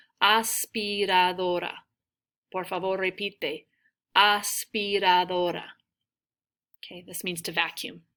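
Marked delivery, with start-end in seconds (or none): 0.2-1.7 said a little slower, slowed-down pronunciation. A teacher says a tricky word for the class to repeat; said slowly. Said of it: "say that a little slower".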